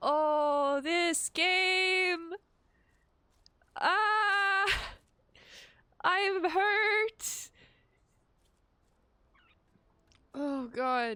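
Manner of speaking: crying while talking. Reacting to a sad scene in a game, crying while talking. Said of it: "I'm, like, still crying".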